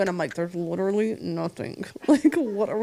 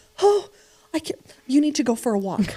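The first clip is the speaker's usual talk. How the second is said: put-on exasperated pleading, higher; 5 semitones higher than usual. Retelling an older lady arguing with her husband on a delayed plane: imitating an arguing nervous wife. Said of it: "her and her husband are arguing".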